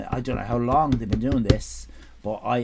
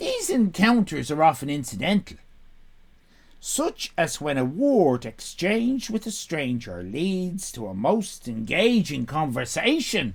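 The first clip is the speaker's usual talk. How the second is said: put-on Irish accent, read aloud; 4 semitones higher than usual. Reading a passage aloud for a listener, in an Irish accent. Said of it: "I'll do it in an Irish accent for you".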